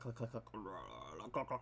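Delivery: soft, low, guttural alien clicking sounds. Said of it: "I can't do the alien voice".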